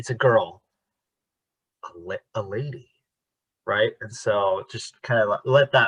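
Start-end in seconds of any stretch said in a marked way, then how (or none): 0.0-2.9 held pause, then "a lady". Coaching a line delivery, pause before a lady. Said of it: "just let there be a beat between those".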